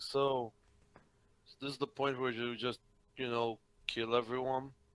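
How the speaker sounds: deeply gloomy, very low, soft, hushed voice. Voicing Vladimir speaking over the comms: very depressed voice. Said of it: "Vladimir very depressed voice saying".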